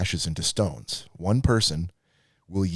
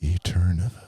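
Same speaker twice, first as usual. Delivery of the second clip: very soft, gentle put-on voice; 3 dB louder than usual. Suggesting a way to say a word, in a soft Alan Almond voice. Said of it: "like you'd say in a very soft, like, sort of a, a Alan Almond voice".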